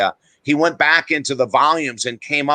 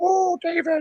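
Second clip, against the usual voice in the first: put-on very high small voice, Indian accent; 4 dB quieter than usual. Retelling what a guru said off air: imitating Maharishi's little Indian voice. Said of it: "in his little Indian voice".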